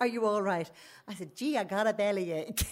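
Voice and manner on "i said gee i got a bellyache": put-on American accent. Retelling answering a woman who didn't realise it was them, best fake American accent. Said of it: "I put on my best fake American accent".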